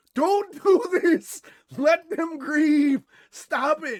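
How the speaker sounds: very loud, high, shrill scream, slow, words stretched out. Retelling what Bernadette screamed at them: imitating Bernadette screaming. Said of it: "Bernadette screaming at me going".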